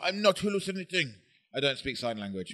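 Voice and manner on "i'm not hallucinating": put-on, pitched-up deaf-speech voice. Retelling what she said after she saw the yellow eye, put-on deaf person voice. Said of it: "I don't know what that voice was".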